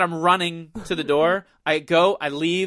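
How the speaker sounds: usual speaking voice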